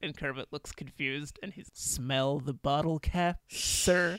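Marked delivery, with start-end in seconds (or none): 1.7-4.2 very drawn-out, very slow, dripping sarcasm. Retelling a movie scene where a waiter serves wine: imitating Steve Martin's sarcastic waiter. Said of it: "every single line he delivers is just dripping in sarcasm".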